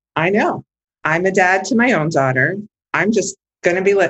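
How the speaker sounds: ordinary delivery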